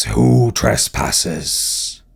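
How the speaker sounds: resounding, booming, rough, otherworldly voice. Narrating a scene, the speaker voices a figure holding a great sword: booming, ethereal voice. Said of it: "in a kind of booming, ethereal voice".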